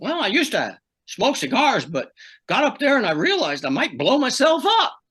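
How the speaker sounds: thin, tinny, very high voice. Retelling a man's answer about his toothpick between runs: imitating Marty's tinny voice. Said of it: "he had this sort of tinny voice".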